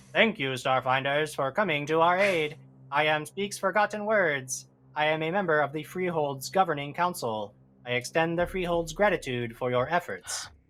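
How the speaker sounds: mechanical, machine-like voice. Game master voicing a suit of armor addressing the party, Speaks Forgotten Words mechanical voice. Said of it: "you hear this mechanical voice that says".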